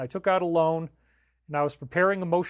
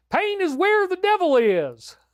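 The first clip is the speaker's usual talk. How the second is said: funny put-on Southern accent, higher and louder; 13 semitones higher, 5 dB louder than usual. Sharing a silly saying used to tolerate pain: funny Southern accent. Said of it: "in a funny Southern accent".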